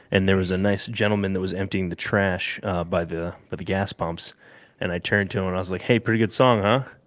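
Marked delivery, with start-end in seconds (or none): 5.8-6.8 put-on passive-aggressive tone, pitched higher. Retelling a remark to a man emptying trash by the gas pumps, mock passive-aggressive. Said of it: "Like super passive aggressively".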